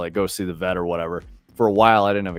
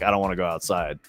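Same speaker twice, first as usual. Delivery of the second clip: mock crying cat voice. Retelling how a pet cat sounded when taken outside: imitating a cat's crying. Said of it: "like crying noises".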